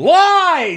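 loud, high-pitched shouting.

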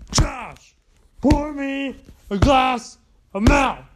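slow, dragged-out, drawn-out hollering yell. In a comedy sketch, a man demands a glass of milk from Josh, yelling. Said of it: "Why are you yelling at me?".

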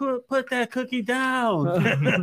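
very high, very slow, drawn-out scream. Imagining a scene aloud, imitating John Cena screaming. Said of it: "I could actually hear John Cena screaming".

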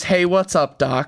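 classic cartoon rabbit character voice. Doing impressions of cartoon characters: Bugs Bunny voice. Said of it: "And then Bugs Bunny is".

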